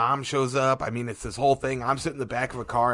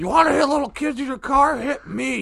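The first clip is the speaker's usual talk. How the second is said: mock shrill, very high-pitched, loud screaming; 13 semitones higher, 6 dB louder than usual. Retelling how a man walked up screaming at the speaker; imitating a man screaming. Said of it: "he's screaming at me".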